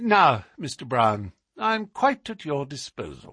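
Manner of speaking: usual speaking voice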